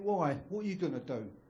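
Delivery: ordinary delivery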